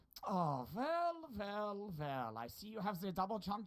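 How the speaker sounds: put-on German accent. Asked for a sentence on full face cam, speaking in a fake German accent. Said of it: "that's a German accent?".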